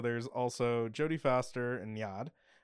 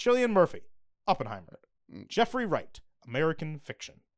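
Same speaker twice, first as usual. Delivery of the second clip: showy, swooping awards-show announcer voice; 4 semitones higher, 4 dB louder than usual. Reading out nominees and their films, announcer voice. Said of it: "Why did I say that like the actual announcer?".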